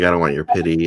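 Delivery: normal talking voice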